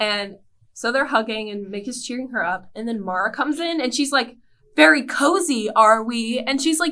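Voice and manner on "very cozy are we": very loud, very slow, mean, jealous tone. Retelling a scene from a show: imitating Mara, jealous and mean. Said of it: "so jealous and mean".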